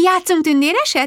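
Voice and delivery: high, lilting, trilling sing-song voice. [name] changes tactics and speaks to Konstanz, trilling. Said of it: "Trillázta".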